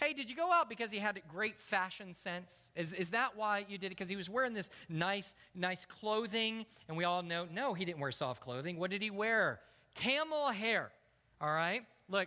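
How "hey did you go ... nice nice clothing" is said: ordinary talk, nothing marked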